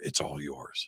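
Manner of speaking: very low half-whisper, close in. Retelling what a man half-whispered in the speaker's ear, retelling a half-whisper. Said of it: "he whispers in my ear".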